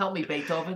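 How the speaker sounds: put-on shifty, weaselly Brooklyn accent. Speaker voices a stray dog they describe, in a weaselly Brooklyn guy voice. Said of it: "he talks like a he's like a weasel kind of guy who comes from Brooklyn".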